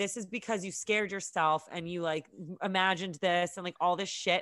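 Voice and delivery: ordinary talk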